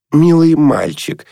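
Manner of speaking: thin, high, squeaky voice. Nonna Mikhailovna answers Arkady on the phone, in a squeaky voice. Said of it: "пропищал голос Нонны Михайловны".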